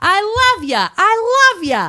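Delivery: put-on New York accent. Retelling a message passed along like a game of telephone, in a New York accent. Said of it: "says like the New York".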